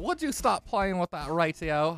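put-on British accent. Friends taking turns saying a line in a british accent; british accent. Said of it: "A British accent".

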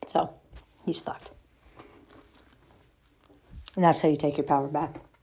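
speaking with food in mouth, mid-chew. Talking to viewers, the speaker finishes a point while eating. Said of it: "Sorry, I'm eating".

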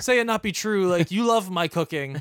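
play-acted offended, high, wounded, right near tears. Retelling a movie argument, the speaker acts out Willem Dafoe's reply, imitating Willem Dafoe, mock-offended. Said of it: "gets so offended and like he looks like he's gonna cry".

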